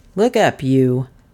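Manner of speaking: low, muttered voice. The detective, jerking the unknown man's head up, speaks to him: muttered. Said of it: "muttered the detective".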